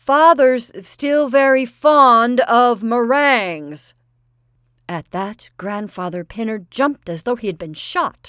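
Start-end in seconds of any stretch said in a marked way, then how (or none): 0.0-3.9 very loud, high, slow, deliberate shout. Narrator reads Cyril leaning forward toward Grandfather Pinner; yelled. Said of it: "leaned forward and yelled".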